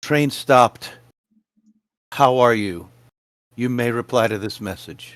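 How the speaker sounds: voiced stage half-whisper. Casting a message cantrip toward a distant master: half-whispering a message. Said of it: "and I whisper".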